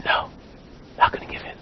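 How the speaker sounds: whispering. A man pulled by a rope toward a pit digs in his heels, whispering. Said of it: "he whispers".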